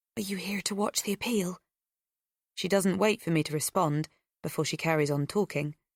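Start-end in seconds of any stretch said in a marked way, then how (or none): 0.2-1.6 quiet, soft, hushed delivery. A woman standing close beside the narrator speaks to them in a hushed voice. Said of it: "she says in a hushed voice".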